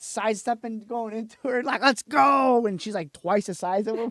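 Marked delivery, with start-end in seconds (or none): 1.8-2.7 very loud, high, rousing yell. Telling a listener about a woman urging a group of ladies on: retelling a yell. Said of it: "Like yelling at them".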